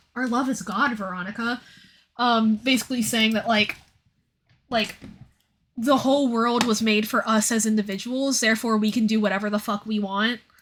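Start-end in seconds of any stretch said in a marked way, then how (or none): 0.2-1.7 said lightly, casual and offhand. Retelling a movie character's line: imitating a casual tone. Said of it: "he says it so casually".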